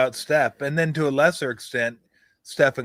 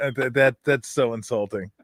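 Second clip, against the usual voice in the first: usual speaking voice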